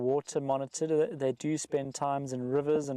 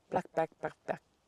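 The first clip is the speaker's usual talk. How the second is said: rattled off as fast as possible; 2 semitones higher than usual. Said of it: "Try and say it really quickly".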